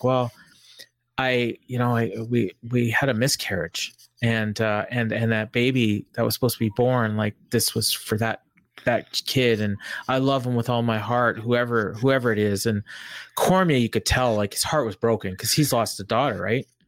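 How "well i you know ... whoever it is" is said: usual speaking voice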